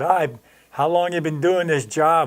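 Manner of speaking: loud projected mock voice. Retelling questioning a young guy at a strip search booth: imitating own loud voice. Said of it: "I was raising my voice real loud".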